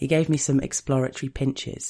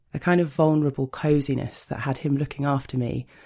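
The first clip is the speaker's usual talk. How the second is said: ordinary delivery, nothing marked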